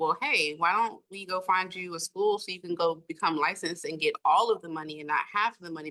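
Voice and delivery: plain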